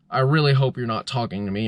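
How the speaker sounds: ordinary talk, nothing marked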